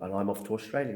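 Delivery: ordinary talk, nothing marked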